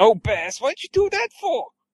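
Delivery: very high, swooping, disgruntled, fed-up griping. Pitching a show with Bass and Leon, Leon as disgruntled brother. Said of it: "Leon is like disgruntled brother".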